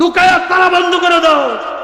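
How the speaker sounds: loud shouting.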